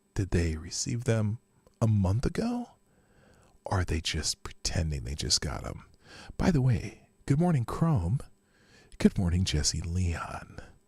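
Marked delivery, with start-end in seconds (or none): 6.4-10.6 hushed whisper at much lower pitch. Speaker greeting listeners by name before starting, whispering. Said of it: "I'm using my sexy time voice because I'm whispering".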